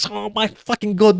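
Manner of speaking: losing it, high frenzied outburst. Complaining about reviewers overhyping a game: imitating Angry Joe losing it. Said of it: "Like losing his mind, being sensational".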